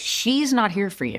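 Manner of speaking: emphatic delivery with each word leaned on hard. Retelling what Epstein said while escorting someone out: imitating Epstein's emphatic line. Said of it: "he emphasized".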